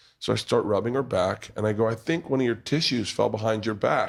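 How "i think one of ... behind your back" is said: ordinary talk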